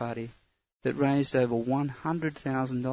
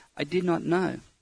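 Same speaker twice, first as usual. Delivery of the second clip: shocked stammer in short bursts, much higher pitch; 4 semitones higher than usual. A shocked man answers a nun, words coming in short bursts, stammering. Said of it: "he stammered. He was so shocked his words were coming out in short bursts".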